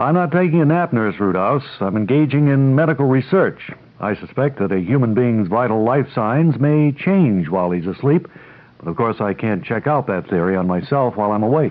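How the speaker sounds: ordinary talk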